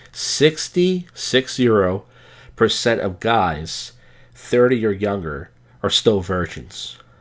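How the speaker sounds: slow, deliberate, carefully paced word by word. After admitting to talking fast, repeating a figure while slowing down. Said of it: "I talk real fast. Let me slow down".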